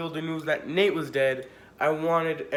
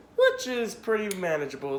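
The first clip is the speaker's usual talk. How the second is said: cracking, breaking voice; 3 semitones higher than usual. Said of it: "That was a voice crack".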